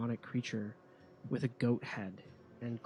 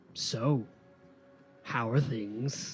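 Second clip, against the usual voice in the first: demon voice, laughing while speaking; 4 dB louder than usual. Voicing a demon whose voice echoes out: demon laughing while speaking. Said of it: "and you hear it laughing".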